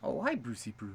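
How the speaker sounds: soft, put-on attempt at a Canadian accent. Trying out accents, the speaker greets someone in a Canadian accent. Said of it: "That's more Canadian".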